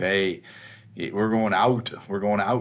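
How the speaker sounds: casual, put-on Pennsylvania accent. Comparing accents heard growing up, doing a Pennsylvania accent. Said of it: "more the Pennsylvania type".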